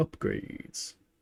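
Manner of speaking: breathy put-on film character voice. Musing about looking at upgrades, Neo voice. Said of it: "In the voice of Neo".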